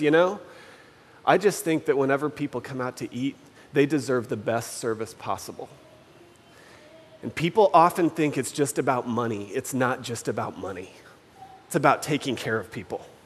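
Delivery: soft, hushed, confiding stage whisper. Retelling what a woman refilling their glasses said to them: imitating a half-whisper. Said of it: "she says to us kind of in this like whisper voice".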